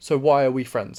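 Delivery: ordinary talk, nothing marked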